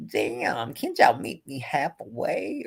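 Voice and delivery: put-on, very slow, drawn-out, whiny, condescending voice. Acting out a man after remarking on how he sounds, mock-whiny and condescending. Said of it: "See how whiny he sound? He's so condescending and mean and whiny".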